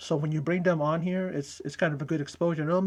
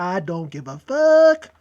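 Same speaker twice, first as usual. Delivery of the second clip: put-on voice, loud and booming, every word dragged out; 11 dB louder than usual. Skipping a wrestlers' backstage segment, in a Chris Tucker voice. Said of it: "in Chris Tucker's voice".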